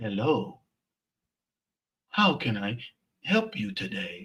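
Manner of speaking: put-on canned, automated robot voice. Retelling a drive-thru greeting heard on pulling up: imitating a robotic voice. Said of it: "Sounds like a damn robot".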